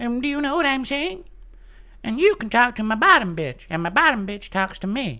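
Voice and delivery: put-on very high, squeezed-up cartoon boy voice. Showing how a cartoon character used to sound, Butters voice. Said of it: "That's how Butters used to sound in South Park".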